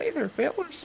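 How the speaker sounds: very high pitch, dead earnest delivery. Showing how a voice reminds them of Butters from South Park. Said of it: "reminds me of Butters from South Park".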